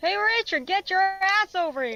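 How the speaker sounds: high, shouted call. Voicing a character calling a crewmate over: shouting. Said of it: "Boots shouts".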